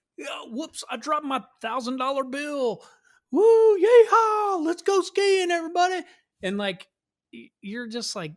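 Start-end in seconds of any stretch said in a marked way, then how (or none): 0.2-6.0 very high, loud, brash rich Texan tourist whoop. Mocking Texans who come skiing, imitating a Texan tourist skiing. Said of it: "it was like all Texans with".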